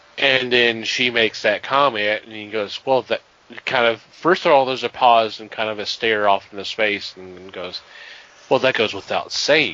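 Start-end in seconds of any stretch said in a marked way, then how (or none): 8.5-9.8 mock-deadpan delivery. Retelling a man's answer after a pause and a stare into space; retelling a deadpan reply. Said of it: "It's like the perfect deadpan response".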